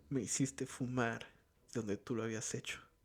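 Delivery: plain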